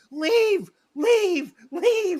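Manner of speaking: very high, repeated screaming. Recounting watching a ghost story scene with the engineer, retelling a scream. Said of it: "I'm screaming".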